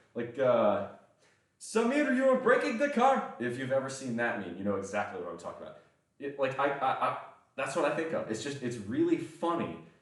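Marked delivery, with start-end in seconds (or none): 1.6-3.4 put-on furious, very high-pitched, heavy Indian accent. Quoting a meme line: imitating an angry heavy Indian accent. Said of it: "a really heavy Indian accent and you're angry".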